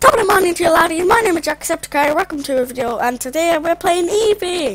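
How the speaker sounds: put-on Irish accent. Impersonating an Irish YouTuber for an accent round, doing a Jacksepticeye impression.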